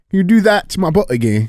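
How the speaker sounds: loud English accent, pitched very high. Repeating a line after being asked to do it: english accent. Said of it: "Do the English accent".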